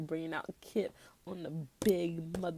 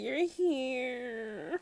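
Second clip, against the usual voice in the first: put-on stoned, smiling voice, pitched higher; 7 semitones higher than usual. Retelling a hospital scene with Ilya, imitating Shane high as fuck. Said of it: "high as fuck, like, smiling".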